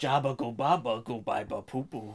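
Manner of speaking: words mangled into alien gibberish voice. Trying to say a line the way Jabba would: Jabba the Hutt voice. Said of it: "That is not how Jabba would say that".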